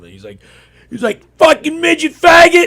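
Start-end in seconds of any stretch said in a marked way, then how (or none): 1.4-2.7 put-on screaming, much higher and louder. Speaker retells a man screaming at him on the street, imitating a screaming stranger. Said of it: "he's just screaming randomly".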